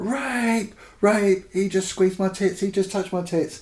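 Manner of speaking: mock full high scream, first word drawn out. Retelling how a woman officer screams during a street stop: imitating someone screaming. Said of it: "the girl just screams".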